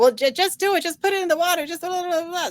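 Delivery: very high, pushy, insistent scolding yell. Retelling how mom pushed about the tea: imitating mother yelling. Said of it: "yelling at me".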